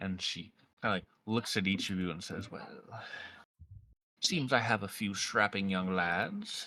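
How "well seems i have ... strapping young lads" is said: put-on slow, old crone voice. A storyteller voices an old crone addressing the three players. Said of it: "she looks to be like an old crone".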